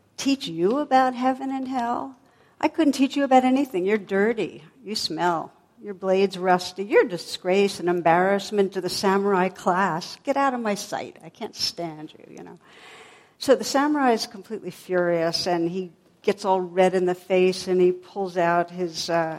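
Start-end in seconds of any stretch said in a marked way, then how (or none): 0.2-12.4 acted-out, scornful, utterly disdainful tone full of contempt. Retelling a story, voicing a little monk scolding a samurai: acting out utter disdain. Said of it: "he looked at him with utter disdain".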